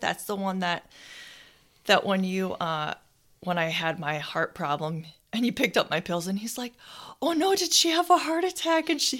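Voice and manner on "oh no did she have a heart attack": mock fretting, very high and alarmed. Speaker recalling the pharmacist's reaction to the speaker's heart problem, retelling a worried pharmacist. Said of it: "he was all worried".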